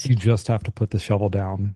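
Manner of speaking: plain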